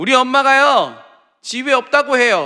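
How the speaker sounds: put-on cheerful, innocent, bright, very loud sing-song child shout. A storyteller acts out a child answering the neighbor, retelling a cheerful loud reply. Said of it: "아주 해맑게 큰 소리로".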